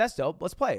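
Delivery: ordinary talk, nothing marked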